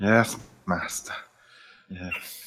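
hushed, breathy whispered servant voice. Playing a subservient servant answering a master: Igor voice. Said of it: "but I do an Igor voice".

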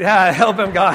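loud put-on shout.

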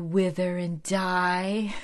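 put-on breathy voice. Retelling Darla's reply to a man's question, in Darla's breathy voice. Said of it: "in her breathy voice".

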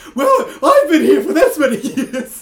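very high, shrill, loud, eccentric, whimsical voice. A player trying out a new voice for Darby at the table, in a Darby voice. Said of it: "You're either the Mad Hatter or like".

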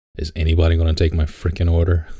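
normal talking voice

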